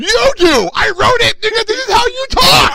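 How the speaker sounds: frustrated shouted outburst.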